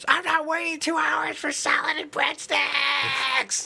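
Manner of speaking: put-on, very high, shrill, shrieking scream. Telling a parking lot story about a lady and her kid, retelling a woman screaming. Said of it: "she started screaming at her kid".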